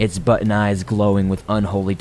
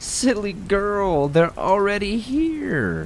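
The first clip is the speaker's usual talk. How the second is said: very high, twisted, warped, gleeful, delighted sing-song; 13 semitones higher than usual. A toy rabbit speaks to a girl waiting for her parents, warped, delighted voice. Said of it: "In a warped, delighted voice".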